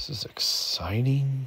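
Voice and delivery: openly sarcastic tone. Putting a unit on the subs in a game: sarcastic. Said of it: "if you can hear the sarcasm".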